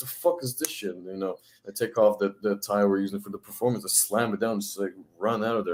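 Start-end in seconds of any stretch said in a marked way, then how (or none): 0.0-1.0 mock furious whispered stage outburst. Recounting the girls walking up to her during a performance; imitating a furious outburst. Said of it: "I'm like furious".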